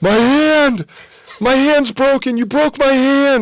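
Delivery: very high, slow, drawn-out shrieking scream. Retelling a crowd fight over a shirt, imitating his own screaming. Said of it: "So I just start screaming".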